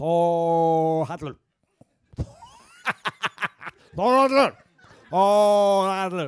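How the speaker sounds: very loud, slow, acted-out drunken voice, one word drawn out. Retelling how his mom said his name at Christmas: imitating his drunk mom. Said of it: "Kinda sound like my mom during Christmas".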